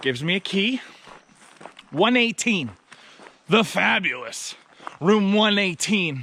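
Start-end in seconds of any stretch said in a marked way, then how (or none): 3.5-6.2 mock-grand, heavy dripping sarcasm. Telling a story about being handed room one eighteen, with heavy sarcasm. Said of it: "Again, a lot of sarcasm".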